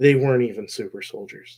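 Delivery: put-on stunned, shocked, beaten-down, defeated voice. Retelling his line at the end of a fight: imitating a defeated, shocked voice. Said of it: "in such a defeated, like, shocked voice".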